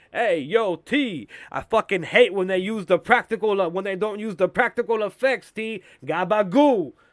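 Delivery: angry, loud complaining. Joking about how he keeps talking: angry Tony Soprano voice. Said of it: "angry Tony Soprano, I'm like".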